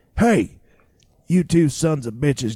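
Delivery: put-on grumpy, mean, slow old Oklahoma drawl. Retelling a man calling two people over in a dark sorting alley, imitating a mean, grumpy old Oklahoma voice. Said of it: "just a mean, grumpy, old, slow Oklahoma voice".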